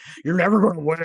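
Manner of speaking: very loud, high, possessed demon-like voice. Retelling a possessed character's line from a show: demon-like voice. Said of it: "he starts talking all, like, demon-like".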